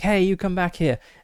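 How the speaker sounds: loud, high-pitched yelling. Narrating a chase scene, retelling a character's yell. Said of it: "he's like yelling out like".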